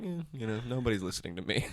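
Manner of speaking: put-on dead straight-faced, serious, matter-of-fact delivery. Retelling what a coworker said: imitating a straight-faced delivery. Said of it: "He said it with a straight face".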